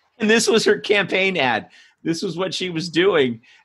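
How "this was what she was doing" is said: ordinary talk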